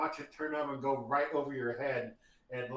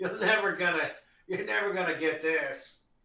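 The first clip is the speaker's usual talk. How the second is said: loud, mocking, jeering taunt through laughter; 4 semitones higher, 5 dB louder than usual. Voicing a caped figure on a roof who laughs mockingly at the players: mocking laughing voice. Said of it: "she laughs mockingly at you".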